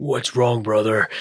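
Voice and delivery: deep voice dropped way down. Retelling a scene between two brothers, Clancy Brown impression. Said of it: "I'll do my best Clancy Brown and my best Sam Witwer here".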